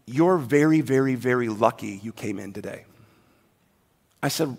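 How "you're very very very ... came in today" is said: mock dead serious, low and grave tone. Retelling what the tech said during the ultrasound: imitating a serious tone. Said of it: "She got real serious with me".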